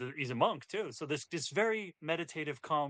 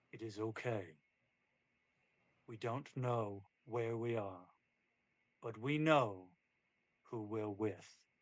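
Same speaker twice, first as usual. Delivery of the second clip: weighty, solemn, very deep, profound voice; 5 semitones lower, 4 dB quieter than usual. Retelling what a man of very few words says, very deep voice. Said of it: "says something in a very deep voice".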